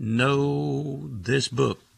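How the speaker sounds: slow and very emphatic, leaning on every word. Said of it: "And then he repeated".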